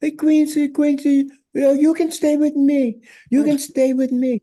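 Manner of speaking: very high, piping voice. Retelling being invited to stay with him in africa, quoting him: imitating a high-pitched voice. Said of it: "He had that high pitched voice".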